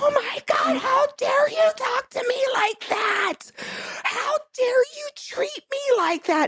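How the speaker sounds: acted, very high, shrieking, tearful, outraged screaming cry. Speaker acts out their own outburst in a professional office, retelling screaming and crying. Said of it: "And I fucking was screaming, crying".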